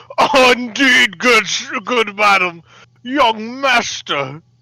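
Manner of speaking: put-on rich man voice, very high, very slow. Doing the voice of a character's father: put-on rich-man character voice. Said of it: "I'll do the voice of Flannery's father".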